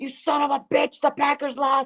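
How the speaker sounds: acted wild, very high, unhinged crazed shout. Recalling knocking on a friend's door after the Packers lost, retelling own wild yelling. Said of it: "I was like going crazy".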